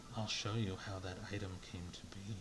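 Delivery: whispered in a character voice. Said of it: "whispers into your ear".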